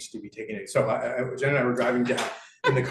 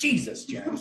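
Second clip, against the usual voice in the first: scornful, derisive, very high-pitched tone; 14 semitones higher than usual. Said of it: "it's very different than".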